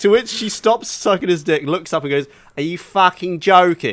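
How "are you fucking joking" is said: put-on broad Cockney accent, laid on thick. Retelling what a woman said to the man in his video: very cockney accent. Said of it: "In the very Cockney accent".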